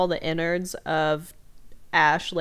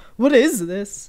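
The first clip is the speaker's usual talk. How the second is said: loud, high, freaked-out cry in shock. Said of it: "They're like".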